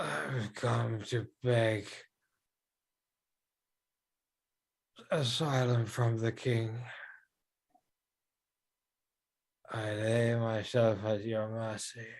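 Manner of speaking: soft, raspy, rasping croak. A figure begs the king for asylum, in a raspy, unwell croak. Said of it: "very sort of raspy, uh, unwell voice that he he you know croaks out".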